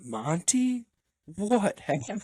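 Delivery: stunned, disbelieving tone. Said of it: "they were in shock".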